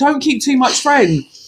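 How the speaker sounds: put-on Jamaican accent. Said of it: "I'll do that again".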